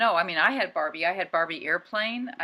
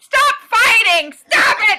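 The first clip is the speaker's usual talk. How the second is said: shrill, very loud, very slow, drawn-out screaming; 14 dB louder than usual. Recalling yelling at dolls lying on a bed: retelling own screaming. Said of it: "but I was screaming at them".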